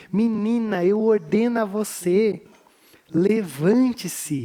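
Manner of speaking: slow, gentle, loving delivery. Retelling how Jesus speaks to the girl: imitating Jesus' loving voice. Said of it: "com essa voz que ama".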